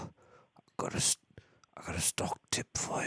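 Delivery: imitated raspy voice. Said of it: "There's a raspy voice on the other end".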